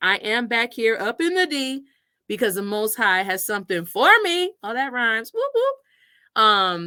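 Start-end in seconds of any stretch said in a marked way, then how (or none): none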